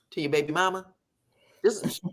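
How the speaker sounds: put-on deadpan voice, flat and expressionless. Retelling Chris's question to Martell about his baby mama: imitating Chris, straight-faced. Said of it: "just as straight face as can be".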